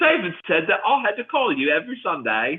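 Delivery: put-on British accent. Told to redo a quote in a British accent, doing a put-on British accent. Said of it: "had that British accent down for a second there".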